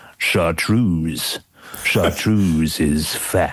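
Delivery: very low, deep baritone. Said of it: "He's got this incredible like baritone voice".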